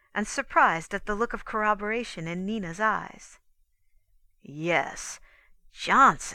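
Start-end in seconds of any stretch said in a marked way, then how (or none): 4.4-6.4 insistent, pressing the point, louder. Rance goes on speaking about johnson; insistent. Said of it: "went on Rance insistently".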